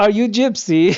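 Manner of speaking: put-on speaking with a Balkan accent. Showing someone what he sounds like, doing a Borat impression with a Balkan accent. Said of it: "I could only do the Borat impression".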